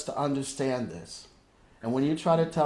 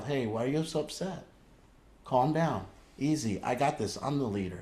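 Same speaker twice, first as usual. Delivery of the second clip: put-on voice used for a small child; 3 dB quieter than usual. Showing how to talk to an upset part of yourself: talking as to a little child. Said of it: "just like a little child".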